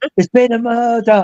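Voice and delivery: mock sudden high shout, talking-mannequin voice. Retelling a museum visit where a mannequin suddenly shouts: imitating a mannequin's shout. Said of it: "it shouts".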